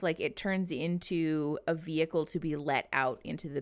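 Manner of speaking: ordinary talk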